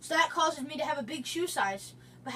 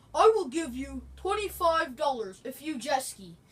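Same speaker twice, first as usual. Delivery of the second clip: put-on dad voice. Retelling what Dad offered before leaving: imitating Dad's voice. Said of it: "let me do my dad's impression".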